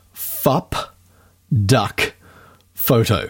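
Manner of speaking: very slow, deliberate, word by word. Introducing a photographer's website, the speaker says its name very slowly. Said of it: "I have to say this very slowly".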